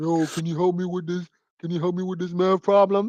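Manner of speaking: put-on deep voice, pushed very low. Speaker imitating a seventeen-year-old still in school, in a deep voice. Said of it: "deep ass voice".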